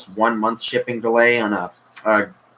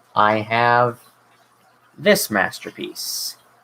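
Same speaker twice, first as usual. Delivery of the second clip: dry, fake admiration laced with sarcasm. Showing a figure that is called hideous right after: sarcastic tone. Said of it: "You can't sense the sarcasm in my voice".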